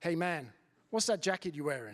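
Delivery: bad put-on American accent. Retelling what a man on a security job asked him, bad american accent. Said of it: "in a very bad American accent".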